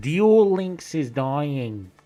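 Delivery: booming, loud, slow, heavy, drawn-out delivery. Acting out something Loom would say: imitating Loom. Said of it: "what's some shit Loom would say?".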